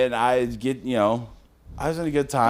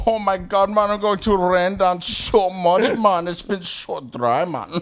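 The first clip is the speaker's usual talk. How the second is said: put-on, fake, mock Indian accent; 5 semitones higher than usual. After asking for a couple of tries to find it, he speaks in a put-on Indian accent. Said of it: "find my Indian accent".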